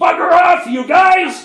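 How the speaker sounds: very high, loud yelling.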